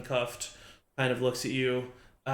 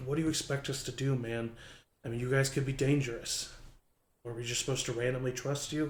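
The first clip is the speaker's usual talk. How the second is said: talking quietly in a low voice; 4 dB quieter than usual. Voicing a character who uncuffs the player and talks to them: talking quietly. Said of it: "talking quietly to you".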